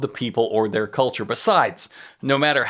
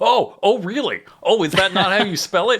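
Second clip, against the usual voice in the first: mock passive-aggressive tone, higher; 7 semitones higher than usual. Imitating a game author answering notes: imitating passive-aggressive retort. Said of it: "passive aggressively responding to those notes".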